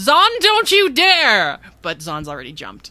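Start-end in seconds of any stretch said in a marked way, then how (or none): 0.0-1.6 loud, high-pitched yelling. Playing a character yelling at a crewmate who jumps: yelling back. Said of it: "she yells back".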